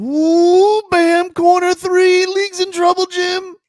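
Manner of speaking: very high, very loud announcer call. Reading a guy's comment aloud without knowing why, in a Tony Romo voice. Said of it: "in Tony Romo voice".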